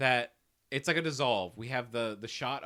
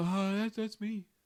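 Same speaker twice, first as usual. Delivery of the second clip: put-on drunk voice, pitched higher; 7 semitones higher than usual. Retelling a movie scene, answering the family who found him: Navin's drunk voice. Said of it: "'Cause he's got that drunk voice".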